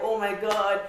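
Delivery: put-on tearful, crying voice. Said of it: "I was already crying".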